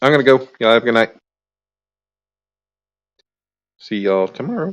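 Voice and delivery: voice breaking and cracking. Signing off for the night and saying see you tomorrow: voice cracking. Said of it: "As my voice is cracking".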